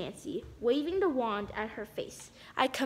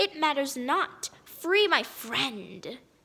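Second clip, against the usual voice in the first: words pushed out in a hiss. Ivy answers a girl who asked who she is, hissing. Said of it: "she hissed".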